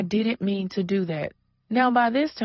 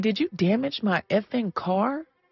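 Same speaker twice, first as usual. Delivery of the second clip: imitated angry tone. Retelling confronting a driver about a damaged car: imitating own angry question. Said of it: "I'm immediately pissed off".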